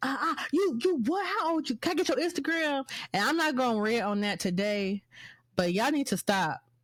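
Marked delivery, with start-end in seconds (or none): 0.0-2.9 put-on young male voice, higher pitch. Retelling how a little boy at the club asked for Instagram: imitating the little boy. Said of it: "And he was like".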